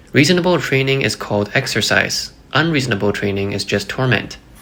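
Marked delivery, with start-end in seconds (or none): none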